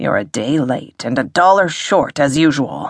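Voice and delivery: ordinary delivery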